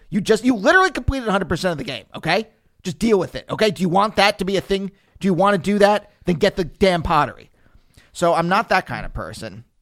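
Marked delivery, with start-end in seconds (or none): 0.1-7.5 harsh, strict, self-berating scolding voice. Voicing the inside of one's brain scolding a gamer: harsh inner voice. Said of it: "that's the harsh voice".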